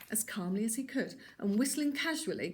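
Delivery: plain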